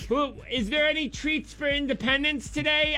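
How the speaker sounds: high, soft office lady voice.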